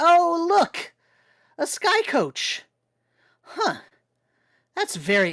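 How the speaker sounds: really loud, carrying, swooping voice. Voicing Professor Orb spotting a sky coach in a cave: really loud. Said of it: "he's being really loud".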